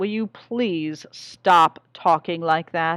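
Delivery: fed-up, exasperated, irritable, annoyed voice. Reading a story, a husband asks his wife to stop: irritable. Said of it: "he said irritably".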